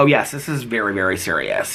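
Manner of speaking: normal talking voice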